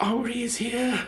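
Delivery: feeble, weak, faint voice. Voicing Henri, lying in a bed, greeting the others: weak voice. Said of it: "Henri kind of weakly goes".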